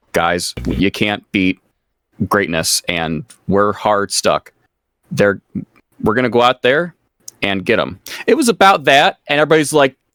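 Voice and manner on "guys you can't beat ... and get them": low, lifeless, unenthused delivery. Retelling how someone said a rallying line, in a flat monotone. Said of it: "I'm trying to like find the monotone".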